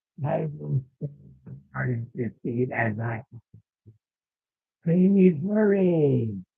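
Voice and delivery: put-on nasal voice. Role-playing a guard at the kingdom gate, in a nasal put-on guard voice. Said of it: "I'm doing a voice like this, which is easy because my nose is funny".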